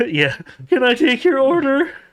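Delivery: shrill, very high, loud, crackling prepubescent voice. Imagining the restaurant puppet taking the order, in a crackling prepubescent voice. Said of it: "like crackling prepubescent voice come over like".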